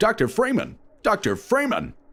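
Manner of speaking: put-on voice pitched way up, swooping. Showing an impression that is still being worked on: G-Man impression. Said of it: "that's one I've been working on as well".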